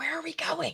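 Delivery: whispered. Following the others out of a foul-smelling room: whisper. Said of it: "kinda whisper".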